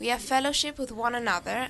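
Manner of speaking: ordinary delivery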